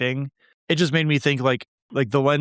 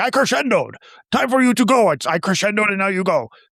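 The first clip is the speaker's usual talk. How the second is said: high, pitched-up delivery with laughter through it; 8 semitones higher, 5 dB louder than usual. Retelling the villain's first joke of the movie: imitating Skeletor laughing. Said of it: "him laughing and being like".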